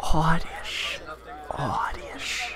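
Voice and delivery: creepy, soft, whispered creature cry.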